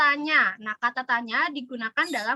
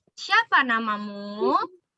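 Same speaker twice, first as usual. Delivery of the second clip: pitch climbing upward on namamu; 3 semitones lower than usual. Intonation lesson modelling a question sentence: rising pitch on namamu. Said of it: "kalimat tanya diucapkan dengan nada intonasi naik".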